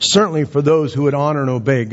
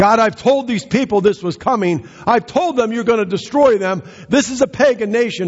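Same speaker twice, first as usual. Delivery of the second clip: greatly displeased, pitched much higher. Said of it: "Jonah was greatly displeased about this".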